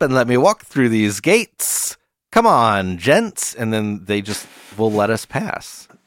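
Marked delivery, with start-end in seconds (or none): 0.0-3.6 showman's hustling patter in a carnival barker voice. Leading the group through the gates, in a carnival barker voice. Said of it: "just going into carnival barker mode".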